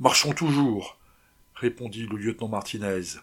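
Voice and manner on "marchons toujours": fevered, impatient tone. Lieutenant Martinez replies to the exhausted Rossé with feverish impatience. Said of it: "avec une fiévreuse impatience".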